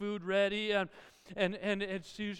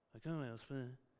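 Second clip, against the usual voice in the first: low grumble under the breath, barely audible; 7 semitones lower, 12 dB quieter than usual. Retelling how a child muttered under their breath at dinner: imitating muttering under breath. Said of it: "that person under their breath says".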